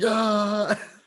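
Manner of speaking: put-on very high, stretched-out, wild pirate scream. Retelling a soldier storming a village: imitating a mad pirate scream. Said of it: "he's just screaming like a pu-, mad pirate".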